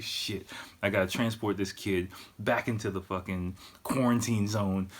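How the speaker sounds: normal talking voice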